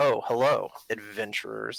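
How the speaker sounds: dry, sarcastic tone. Game master voicing a character greeting the adventurers, sarcastic tone. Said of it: "like in a sarcastic tone".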